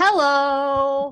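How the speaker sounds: weird, silly, loud comical voice, "hello" drawn out. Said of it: "this weird comical voice".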